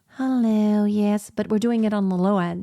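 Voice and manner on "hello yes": put-on sweet little-girl voice. Speaker demonstrating a voice exercise on the low end, in a little child's voice. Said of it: "or like a little child's like".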